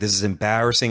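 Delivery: normal talking voice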